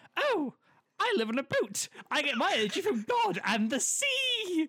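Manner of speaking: very high-pitched, slow, unhurried woman's voice. Retelling what a woman answered when asked who does her gas and electric, imitating her voice. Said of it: "I'm going to do the voice".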